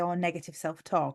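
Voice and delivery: ordinary delivery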